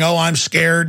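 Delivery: ordinary delivery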